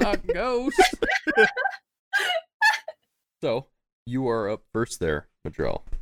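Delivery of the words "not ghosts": high, slow, spooked voice.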